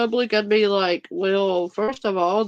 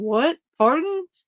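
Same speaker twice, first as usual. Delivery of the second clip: put-on bewildered, caught-off-guard tone, high and confused; 6 semitones higher than usual. Retelling how a man responded to a woman: imitating a confused reply. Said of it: "He was confused".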